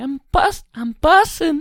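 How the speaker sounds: very high, slow, drawn-out put-on voice. Suggesting she could have one too, trying a really high-pitched put-on voice. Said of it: "What if she got a really high pitched voice too? Like".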